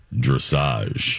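deep voice. Saying a word again after being asked: low voice. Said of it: "Say it in your low voice".

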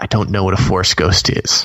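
put-on half-whisper, near-whisper. Retelling how Harrison leaned in close to answer an interviewer, imitating a kind of whisper. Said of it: "kind of whispers to the guy".

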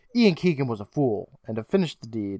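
ordinary talk

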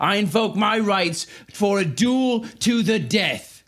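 high-pitched, shouted, yelled delivery. Voicing Tyvor demanding a duel before witnesses: yelling as Tyvor. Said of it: "Tyvor yells".

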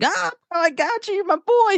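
playful teasing voice. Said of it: "and then he was like".

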